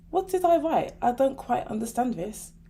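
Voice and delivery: ordinary talk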